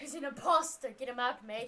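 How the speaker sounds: put-on really terrible Scottish accent. Calling someone an imposter during a game: really terrible scottish accent. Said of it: "really terrible Scottish accent this entire game".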